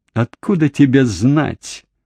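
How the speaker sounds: contemptuous. A wife retorts to her husband's accusation, contemptuous. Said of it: "презрительно бросила она".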